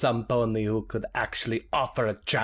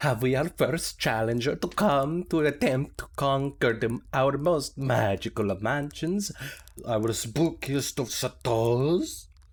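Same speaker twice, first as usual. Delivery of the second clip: put-on storybook vampire voice; 3 semitones higher than usual. Introducing the challenge, in a vampire voice. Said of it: "I love your uh, vampire voice".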